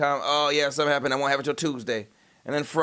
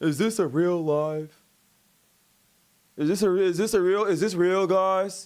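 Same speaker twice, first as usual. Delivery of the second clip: mock disbelieving voice, slow and doubtful; 5 semitones higher than usual. Imitating chat viewers who ask whether the stream is real: imitating doubtful chat viewers. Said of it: "y'all fucking be like".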